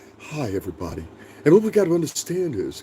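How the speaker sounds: very soft, smooth-talking voice. Speaker mocks soft-spoken podcast hosts by imitating one; real soft smooth-talking voice. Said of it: "real soft voice".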